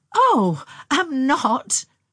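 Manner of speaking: very loud, high laughter through the words. Narrator reads Anne answering after being told to kill the thing; laughing. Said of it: "laughed Anne, shrinking".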